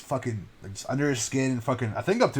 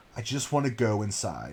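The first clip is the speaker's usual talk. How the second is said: composed, matter-of-fact sternness in everyday voice; 3 semitones lower, 4 dB quieter than usual. Retelling a movie scene with a noose hanging nearby: imitating a calm, stern everyday voice. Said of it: "calm, stern, everyday voice is like".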